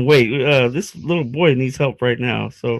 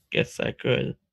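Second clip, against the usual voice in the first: dejected, depressed, breathy hushed near-whisper; 10 dB quieter than usual. Roleplay player agrees to guide someone to the authorities: sounding depressed. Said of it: "You sound so like depressed about that".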